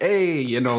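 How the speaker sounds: put-on New Yorker accent. Asking a guest from new jersey about their accent, doing a new york accent. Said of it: "the New York accent".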